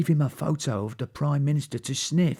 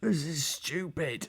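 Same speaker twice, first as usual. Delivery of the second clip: soft groaning, muffled as if through cloth; 2 semitones higher, 7 dB quieter than usual. Narrator reads a character stuck inside a pantomime-spy coat, muffled groan. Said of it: "groaned Huge in a muffled voice".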